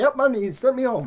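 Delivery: thick put-on Greek accent. Retelling a coworker's answer in a work story, heavy greek accent. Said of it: "heavy Greek accent".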